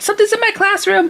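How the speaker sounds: put-on frantic, very high, rattled-off rush of words. Retelling a roommate's phone call: imitating someone panicking, talking fast. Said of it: "she's talking really fast".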